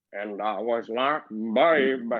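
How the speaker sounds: put-on old man southern drawl. Joking about a card game against a Mind Flayer: old Southern voice. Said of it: "in the most old Southern voice".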